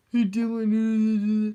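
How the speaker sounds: loud, dumb, dopey voice, a name drawn out. Retelling a kid doing a voice: imitating a kid's dumb voice. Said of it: "that's me imitating him".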